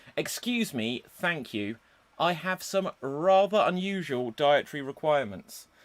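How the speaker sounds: ordinary delivery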